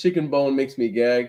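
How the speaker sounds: ordinary talk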